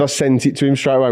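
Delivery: ordinary delivery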